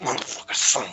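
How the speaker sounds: acted muttering under breath. Describing what you would do in the scene, act out cursing under your breath. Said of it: "curse words under my breath".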